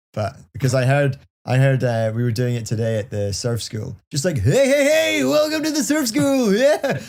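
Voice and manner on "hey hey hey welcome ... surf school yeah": high, belted-out radio host voice. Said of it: "a radio voice".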